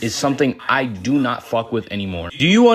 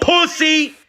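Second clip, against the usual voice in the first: shrill, high-pitched, angry yell. Retelling a stranger shouting an insult: imitating an angry shout. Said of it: "Like, angry, pissed off".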